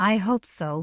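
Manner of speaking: usual speaking voice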